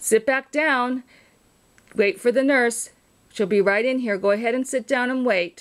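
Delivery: far-off, off-mic voice. Recording a message for a patient alarm: speaking far from the microphone. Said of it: "but with my voice far away".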